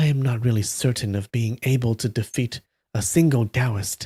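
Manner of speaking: ordinary delivery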